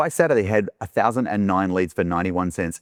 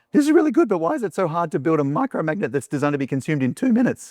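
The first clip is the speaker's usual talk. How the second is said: put-on cracking, voice-breaking teenage puberty voice, pitched high; 8 semitones higher than usual. Retelling what clients said about building one: imitating a voice cracking with puberty. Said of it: "They did it in that puberty voice".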